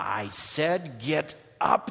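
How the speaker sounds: very slow, through clenched teeth. A narrator reads a man ordering a sobbing child to get up, through clenched teeth. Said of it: "says through clenched teeth".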